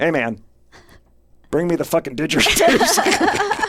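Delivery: tough-guy voice, high and swooping, straining. Retelling what was said to a seller at his door: retelling own tough-sounding line. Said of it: "as tough I could make this sentence sound".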